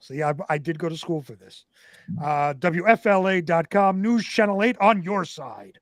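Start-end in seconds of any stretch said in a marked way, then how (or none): 2.5-5.6 put-on radio station announcer voice. Announcing a news station's name and website, in a radio voice. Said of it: "truly a radio voice".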